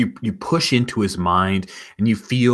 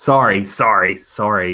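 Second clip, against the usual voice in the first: put-on Canadian accent; 4 dB louder than usual. Apologizing to another player during a game: Canadian sorry. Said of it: "Canadian sorry".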